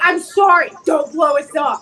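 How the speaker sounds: very sorry, pleading, deeply apologetic voice. Playing a character facing others who could blow them up, the speaker uses their most apologetic voice. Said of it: "my most apologetic voice".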